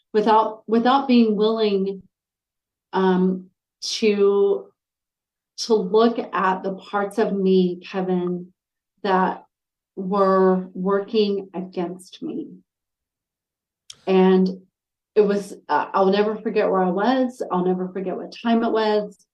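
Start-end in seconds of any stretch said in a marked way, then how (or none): 0.1-12.5 very slow, drawn-out, choked-up, emotional voice. Recalling stepping into coaching, the speaker talks while getting choked up. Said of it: "I'm actually getting choked up".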